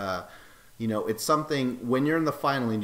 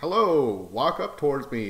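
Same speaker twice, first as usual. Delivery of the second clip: convincing put-on American accent; 2 semitones higher, 3 dB louder than usual. Retelling how he spoke as someone walked up, imitating an american accent. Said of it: "He made this American accent".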